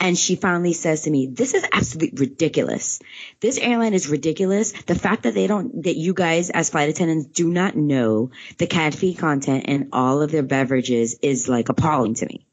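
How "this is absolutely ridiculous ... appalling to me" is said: ordinary talk, nothing marked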